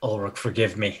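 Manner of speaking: quiet mutter under breath. Voicing a character about to strike his beloved auntie: muttered under his breath. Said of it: "under his breath".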